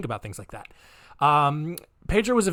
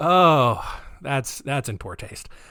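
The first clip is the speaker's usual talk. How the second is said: ordinary talk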